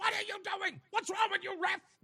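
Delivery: acted, shrill, very high, screaming hollering. Retelling yelling at the referee at a kids' game, imitating himself screaming like a parent. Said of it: "I'm screaming like a parent does".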